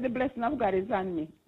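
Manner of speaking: ordinary talk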